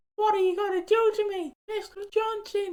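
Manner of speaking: voice pushed way up, very high-pitched. Retelling how he kept repeating a TV clip line, high-pitched Ben Mitchell impression. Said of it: "In a high pitched voice".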